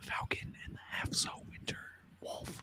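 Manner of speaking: soft, hushed whisper well below speaking level.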